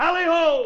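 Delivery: high, loud yell, bellowed out.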